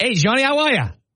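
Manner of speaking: put-on Boston accent. Imitating a man greeting Johnny about his car, in a Boston accent. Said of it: "what he's going to say in a Boston accent".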